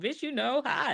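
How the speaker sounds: high, sassy, know-it-all tone. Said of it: "I'm like".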